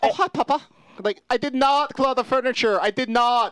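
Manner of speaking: high talking-animal voice. Voicing a pet cat who denies clawing the furniture: Tommy Wiseau voice. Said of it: "I like to pretend he talks like Tommy Wiseau".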